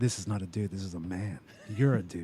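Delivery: acted dry, flat voice. Quoting the character's praise of Thor: dry Drax impression. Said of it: "When he's just like".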